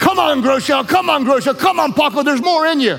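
encouraging mock shout.

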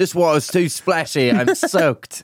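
fake British accent with complaining tone. Acting out a man trashing his bathroom, in a British accent. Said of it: "The British accent?".

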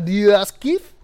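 put-on French accent. Repeating a cafe name, leaning a little into french: put-on french accent. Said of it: "You get a little bit into the French".

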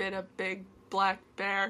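mechanical, flat, monotone robot voice. Saying a tongue twister together, robotic voice. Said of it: "You definitely sounded like a robot".

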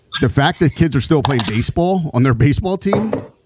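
ordinary talk, nothing marked

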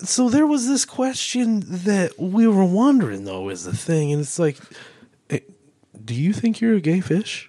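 swooping, animated interviewer voice with pitch swinging all over. Asking a question as Joe Rogan, in a Joe Rogan impression. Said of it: "you do your best Joe Rogan".

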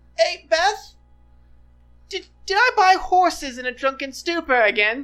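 high-pitched, loud yelling. Narrating a scene, voicing a halfling who yells out to Beth, yelling. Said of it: "You hear him yell in halfling".

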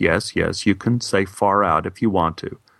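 gentle, reassuring, very calming, soothing teacher voice. Retelling the teacher's answer to a classmate's question, imitating a very calming voice. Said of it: "our teacher said in a very calming voice".

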